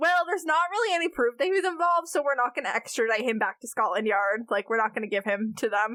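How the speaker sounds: ordinary talk, nothing marked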